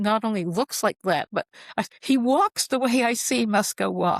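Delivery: ordinary talk, nothing marked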